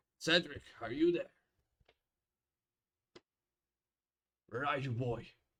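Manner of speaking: calling out loudly, searching. As the mayor, calling out for Cedric from the stairs, shouting.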